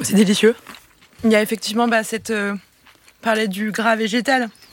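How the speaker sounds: talking with mouth full. Tasting a dish and describing it, talking with mouth full. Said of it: "je parle de la bouche pleine".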